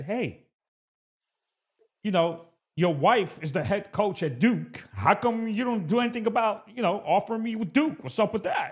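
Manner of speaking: put-on New York accent. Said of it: "I'm gonna say it in a New York way".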